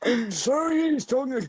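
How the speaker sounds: high, dried-out, bone-dry throat voice. Showing the voice worked out for Game Genie: Game Genie voice with dried-up throat. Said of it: "I had the basis of the voice here".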